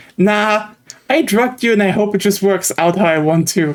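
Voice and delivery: ordinary talk, nothing marked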